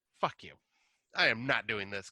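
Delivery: acted-out angry outburst. Retelling a screener tape that cut off before the third act: retelling an angry outburst. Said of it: "Little angry teenager [name]".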